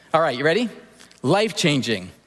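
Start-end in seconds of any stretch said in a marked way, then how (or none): 1.2-2.0 said loudly. Leading a repeat-after-me with the listeners: loud voice. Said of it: "repeat after me in a loud voice".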